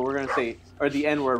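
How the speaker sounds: plain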